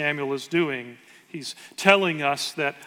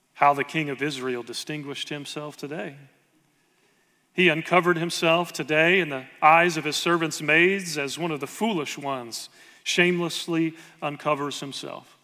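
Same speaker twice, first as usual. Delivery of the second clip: normal talking voice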